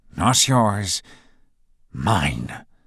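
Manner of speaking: low, growling whisper. Reading a story, a professor warns a rival: low growling whisper. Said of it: "his voice dropping to a low whisper as he growls".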